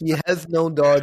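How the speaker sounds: loud, high-pitched sarcastic mock outrage. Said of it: "I'm being so, so, so sarcastic".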